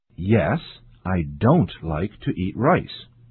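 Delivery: ordinary delivery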